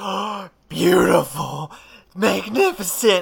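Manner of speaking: high, loud, fanatical mad scientist gushing.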